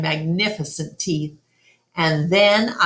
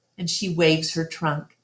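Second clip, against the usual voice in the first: plain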